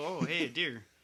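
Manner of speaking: mock casual, unbothered, nonchalant offhand tone. Retelling a friend in the passenger seat spotting a deer: imitating a nonchalant tone. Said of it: "just like that, all nonchalant".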